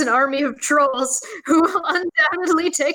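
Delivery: high voice, laughter breaking through.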